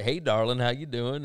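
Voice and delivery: slight put-on Southern accent. Quoting her first greeting, in a little Southern accent. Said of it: "that little Southern accent".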